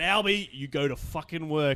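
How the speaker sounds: plain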